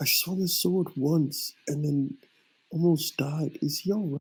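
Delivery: quiet, hushed half-whisper under the breath. Turning around in the scene, the speaker's character half-whispers to ku: half-whispering. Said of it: "I whisper to".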